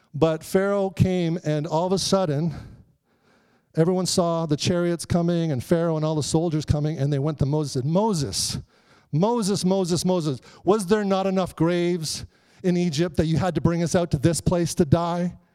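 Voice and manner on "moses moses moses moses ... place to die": ordinary delivery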